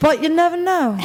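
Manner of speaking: attempted put-on British accent. Repeating the phrase in an attempt at a british accent. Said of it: "You have to do it in a British accent".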